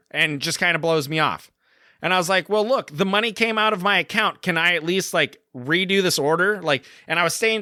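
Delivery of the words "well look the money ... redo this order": ordinary talk, nothing marked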